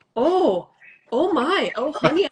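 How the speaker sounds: put-on Minnesota accent, loud, slow, high, very drawn out. Retelling what Mom said on first seeing the second book, in a Minnesota accent. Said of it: "with that Minnesota accent".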